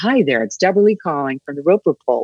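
put-on American accent. Recalling telephone survey work, redoing the call greeting: American accent. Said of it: "I just practiced my American accent".

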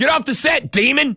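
high, sing-song mock yell.

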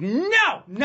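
acted piercing, very high-pitched, shrill screaming. Retelling viral audio of a young woman rebuffing a man asking for change, imitating her screaming. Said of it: "she just screamed at him like".

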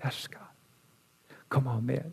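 very quiet, sweet, gentle near-whisper. Telling how he is guided, the speaker voices the Holy Spirit in a sweet, soft voice. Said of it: "just in that sweet, soft voice".

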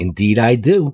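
small, tiny, crackling voice. Joke teller voices a woman answering a trooper's question, in a crackly little voice. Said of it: "She replied in a crackly little voice".

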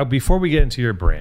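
plain

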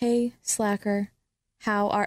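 whispering. Showing how to dictate a message to a watch: whispering. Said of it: "I'll whisper it".

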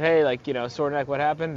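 ordinary talk

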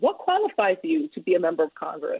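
ordinary talk

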